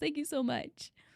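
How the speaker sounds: crying happy tears. Thanking chat for the hype train, crying happy tears. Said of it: "these are happy tears".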